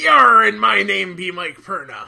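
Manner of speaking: booming, loud, raspy, rough pirate bluster. A podcast host introducing himself on Talk Like a Pirate Day, in a pirate voice. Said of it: "It's Talk Like a Pirate Day, isn't it?".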